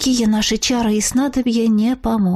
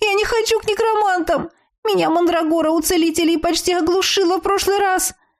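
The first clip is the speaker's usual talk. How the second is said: panicked voice, high-pitched and fast; 8 semitones higher than usual. The narrator's friend calls out to her; panicked. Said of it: "В голосе подруги отчетливо слышалась паника".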